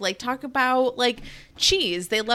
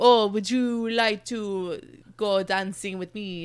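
clumsy, bad, put-on French accent; 3 semitones lower than usual. Retelling a guy asking the French girl to dance, fake French accent. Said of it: "asking her to dance in like a French accent".

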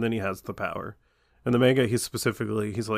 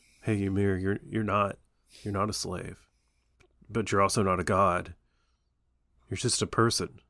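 mock-calm voice, slower pace; 3 semitones lower than usual. Describing how the manga read to them, the speaker is imitating a calm, cool Eren. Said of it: "cool and calm".

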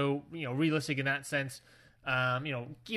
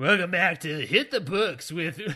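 loud, on-air radio DJ announcer voice; 3 semitones higher, 5 dB louder than usual. Introducing the show hit the books in a radio dj voice. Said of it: "Everybody's got to have a radio voice".

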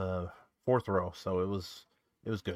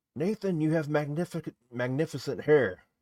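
high-pitched, put-on calling-out yell; 6 semitones higher, 3 dB louder than usual. Retelling what a person in the crowd yelled to nathan, retelling a crowd member's yell. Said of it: "yelled to him".

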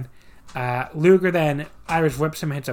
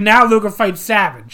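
clumsy, rough put-on Boston accent, loud and high; 5 semitones higher, 6 dB louder than usual. Retelling what Taskmaster points out after a match: imitating Taskmaster's Boston accent. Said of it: "I can't do a Boston accent".

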